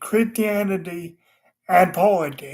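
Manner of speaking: "and" deliberately stressed, with rising pitch.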